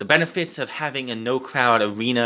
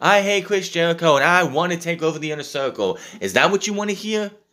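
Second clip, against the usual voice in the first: high, very sarcastic, acted-out mocking tone; 6 semitones higher than usual. Retell how Sammy repeats the words back to MJF, imitating someone very sarcastic. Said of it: "repeats in a very sarcastic mode".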